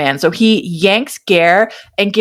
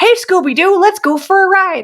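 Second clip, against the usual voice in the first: very high, cartoonish, full goofball voice; 10 semitones higher than usual. Mocking a character's sudden switch from dramatic monologues: imitating a goofy, goofball delivery. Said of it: "Why did you go full goofball".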